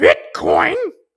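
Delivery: loud, hen-like clucked "bitcoin". Mimicking how a woman says one word: clucking hen-like 'Bitcoin'. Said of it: "like some kind of chicken or some kind of hen".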